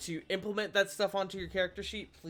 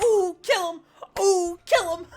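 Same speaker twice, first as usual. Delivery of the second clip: shrill, booming, loud shrieking cheer; 11 semitones higher, 11 dB louder than usual. Picturing a player's character cheering in the back, imitating Theon. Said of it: "picturing, like, Theon in the back going".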